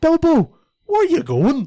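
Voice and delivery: put-on loud shrill Northern Irish accent. Mimicking one hobbit actor's accent, a stereotypical northern irish accent. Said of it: "real stereotypical Northern Irish accent".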